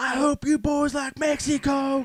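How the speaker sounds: shrill, very high, full-volume holler. Quoting a scene from Super Troopers: imitating a movie character. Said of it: "he's like".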